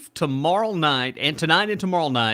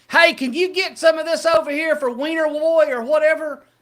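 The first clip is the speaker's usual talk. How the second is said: very high, loud hollering at the top of the lungs; 13 semitones higher, 5 dB louder than usual. Telling a Christmas story, the speaker acts out a man: retelling someone screaming. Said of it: "he was screaming to the top of his lungs".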